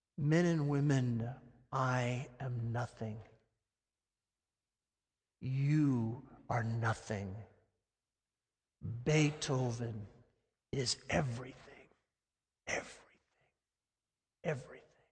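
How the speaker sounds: put-on heavy whisper. Retelling a conductor's words to the orchestra: imitating a heavy whisper. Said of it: "in a very heavy whisper".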